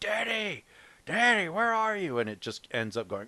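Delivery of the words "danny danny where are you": shrill, very high, acted-out calling out. Retelling a movie scene of a man chasing a boy: imitating a man yelling. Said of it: "He starts off yelling".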